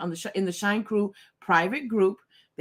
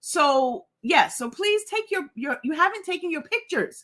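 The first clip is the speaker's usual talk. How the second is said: high-pitched voice stuck up in a squeak; 8 semitones higher than usual. A host greeting viewers asks them to take their pictures, high-pitched voice. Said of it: "there we go with that high pitch voice again".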